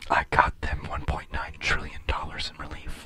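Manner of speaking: hushed whisper, barely voiced. Mocking the president's recent habit of whispering: whispering Biden impression. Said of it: "he starts whispering. He's like".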